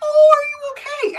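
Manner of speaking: put-on very high, slow, loud, fawning girlish cooing voice. Retelling how girls in the cafeteria draped over a guy, imitating fawning girls. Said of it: "not that far off from the voice tone I just did".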